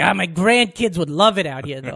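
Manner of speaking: put-on grumpy old man voice. Quoting a movie character's line: imitating an old cantankerous New Yorker.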